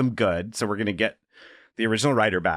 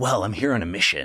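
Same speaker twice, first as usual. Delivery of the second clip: put-on American accent over an Irish voice. Joking about how a film's actor might sound: Liam Neeson doing an American voice. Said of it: "the Liam Neeson doing an American voice".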